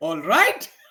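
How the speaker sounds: rising "all right". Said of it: "You don't say".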